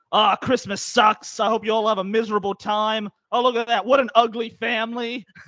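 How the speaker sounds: loud, grumpy yelling rant. Retelling how a tour driver yelled at families: imitating a driver yelling. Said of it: "he's yelling".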